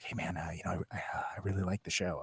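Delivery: mock whispering voice. Retelling how listeners of the show approach at concerts: imitating a fan whispering. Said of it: "you don't have to whisper".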